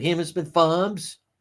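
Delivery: put-on Fall River accent. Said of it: "She does have a weird Fall River accent".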